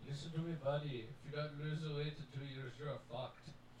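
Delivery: put-on Indian accent. Retelling what his doctor told him about losing weight, Indian accent. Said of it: "he basically said in his Indian voice".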